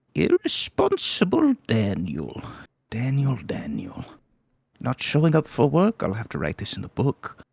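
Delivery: tiny, small gnome voice, swooping sing-song pitch. Narrating a scene, the storyteller voices a gnome from the corner: Thimble's small voice. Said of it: "you hear a small voice from the corner".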